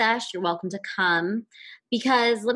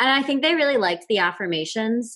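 normal talking voice

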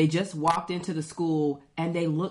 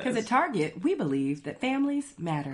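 sing-song commercial voiceover, ad narrator delivery; 5 semitones higher than usual. Joking that scenes could be a commercial: commercial voiceover voice. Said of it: "you could actually do a voiceover of a commercial".

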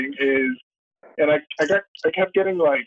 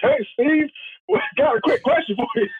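put-on yell, pitched much higher; 12 semitones higher than usual. Retelling how a man came into Steven Adams' availability: retelling a yell in Barry Trammell voice. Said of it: "yelling in his Barry Trammell voice".

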